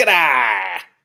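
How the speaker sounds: mock old coach, mouth full of chew. Joking about a phrase, doing an old baseball coach with chew in mouth. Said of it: "like a baseball coach with some chew in his mouth".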